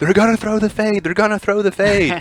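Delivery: very high, shrill, repeated screaming. Recalling a game, the speaker imitates the opposing middle linebacker before the play: retelling a screamed warning. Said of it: "was screaming".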